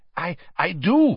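out of breath. A man answers that he does have names to give, breathless. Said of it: "said Karkaroff breathlessly".

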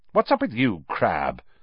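biting, snappish, sharp snapping tone. He snaps a question at his companion. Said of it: "snapped Malfoy".

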